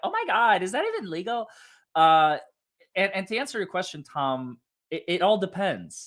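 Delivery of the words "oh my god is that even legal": put-on, high, innocent teenage girl voice. Mid-discussion with Tom, voicing an innocent female teenager in a put-on voice. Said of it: "female teenager voice, the innocent, like".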